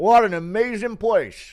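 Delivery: very loud, high, belted gushing praise tone. Praising Chicago, Illinois as an amazing place, Curtis Blades impression. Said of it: "Impression of Curtis Blades glazing Chicago".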